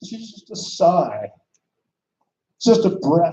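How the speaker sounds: emotional, choked-up voice catching with feeling. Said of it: "I get emotional, really, sorry".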